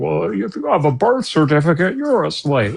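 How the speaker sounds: breezy, slightly high voice. Mocking someone's blithely stupid remark, said in a Kent Hovind voice. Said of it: "you said that in a Kent Hovind voice".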